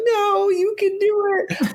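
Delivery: mock very high, slow, drawn-out sobbing voice. Retelling people crying over a dying man, urging him on: imitating tearful crying. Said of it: "they're all super sad and they're all like crying".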